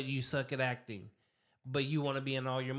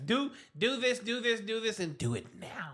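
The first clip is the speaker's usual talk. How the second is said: bossy, pitched-up, commanding delivery; 7 semitones higher than usual. Mocking a director who gives actors orders: imitating a bossy director. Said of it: "Bossy ass".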